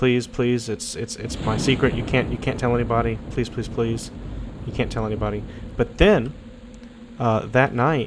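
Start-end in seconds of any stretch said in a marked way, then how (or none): 0.0-5.4 stammering, desperate, begging and pleading tone. Voicing a character caught by the player and begging: begging and pleading. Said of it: "she's begging and pleading".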